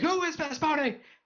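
very high put-on drill-sergeant yell. Imagining him yelling at new recruits, mock Full Metal Jacket yelling.

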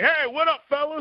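big, loud, high-pitched, casual voice. Retelling greeting the man who sat down next to them; loud Scott Adell voice. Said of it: "in that loud Scott Adell voice".

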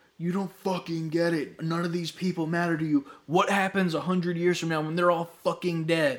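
loud yell. Retelling a scene where a character yells at his son: retelling a yell. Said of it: "he fucking yells at him".

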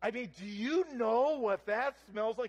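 emphatic delivery.

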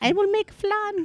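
very high, loud, squeaky cartoon mouse voice. Imitating a friend's childhood voice: Speedy Gonzalez voice. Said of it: "Apparently it was Spanish".

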